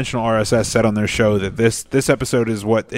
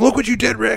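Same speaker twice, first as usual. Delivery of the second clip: angry blow-up, pitched way up; 12 semitones higher than usual. Retelling a cartoon scene where Morty gets really pissed: imitating Morty really pissed. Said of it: "Morty gets really pissed at Rick".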